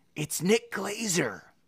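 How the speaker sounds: high, hushed half-whisper under the breath. Reading a story aloud, a character names a captured man: half-whispering. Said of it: "Joe whispered".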